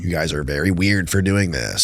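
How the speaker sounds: put-on condescending tone. Retelling Hillary Clinton's answer at a deposition: imitating her condescending tone. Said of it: "in this condescending tone".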